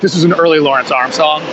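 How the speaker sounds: ordinary talk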